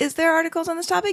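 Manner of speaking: surprised, high and fast.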